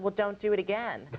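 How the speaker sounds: ordinary talk, nothing marked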